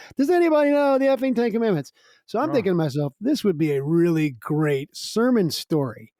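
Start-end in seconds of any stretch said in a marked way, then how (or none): 0.2-1.9 put-on drunk shout, very high. Telling how a drunk woman stumbled off through the restaurant, imitating a drunk yell. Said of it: "keeps yelling in the restaurant".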